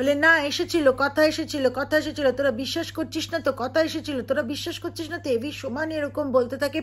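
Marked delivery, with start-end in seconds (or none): none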